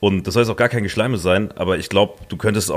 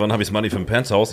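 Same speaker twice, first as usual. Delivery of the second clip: ordinary delivery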